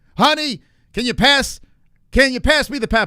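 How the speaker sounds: loud ringside announcer voice. Imitating a commentator asking his wife for pepper: Jon Anik announcer voice. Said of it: "this is his stupid announcer voice".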